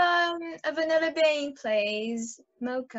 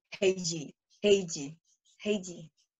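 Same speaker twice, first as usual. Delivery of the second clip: deep put-on Korean accent, much lower, quieter; 10 semitones lower, 5 dB quieter than usual. Asked to say their name in their deepest Korean accent, the speaker answers. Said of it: "Say your name in your deepest Korean accent".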